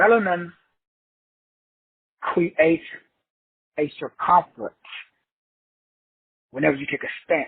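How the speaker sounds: slow, halting, deliberate pacing broken into phrases. Explaining a point about melanin to listeners, repeating it, said slowly. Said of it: "Let me say that slowly".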